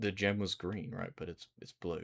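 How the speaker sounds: plain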